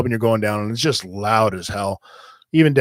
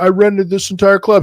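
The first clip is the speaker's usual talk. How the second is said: put-on yell, much higher pitch; 9 semitones higher, 4 dB louder than usual. Retelling a man yelling on the sidewalk at the club owner, retelling a yell. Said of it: "He's yelling".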